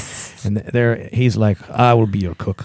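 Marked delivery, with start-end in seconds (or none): 1.7-2.6 imitated Mexican accent. Retelling a movie scene, voicing the cook the characters meet, mexican accent. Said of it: "was that a Mexican accent?".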